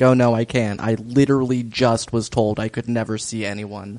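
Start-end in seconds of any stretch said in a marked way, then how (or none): none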